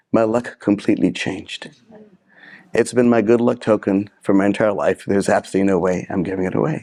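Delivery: ordinary delivery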